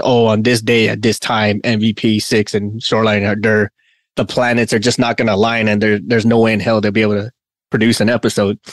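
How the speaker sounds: ordinary talk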